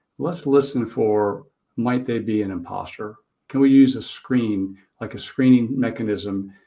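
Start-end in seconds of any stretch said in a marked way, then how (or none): none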